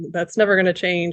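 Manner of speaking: put-on sarcastic, apathetic tone. Retelling own past burnout attitude at work: imitating own sarcastic apathetic tone. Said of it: "this really kind of sarcastic, apathetic attitude".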